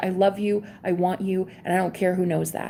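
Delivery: normal talking voice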